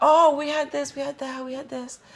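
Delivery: acted-out very high, loud griping, complaining voice. Retelling the people complaining about food in the story: imitating people complaining. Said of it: "They're complaining".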